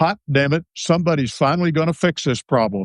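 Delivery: blunt, direct, forceful delivery. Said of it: "in a very direct, forceful voice".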